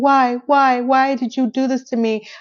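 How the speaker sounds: mild, drawn-out scream, kept restrained. Retelling what a woman screamed, acting out the scream. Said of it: "And she's screaming".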